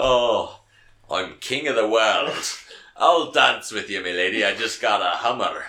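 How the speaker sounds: put-on Scottish-accented voice. Imagining another actor playing the film role: Sean Connery impression. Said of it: "Sean Connery playing this fucking role".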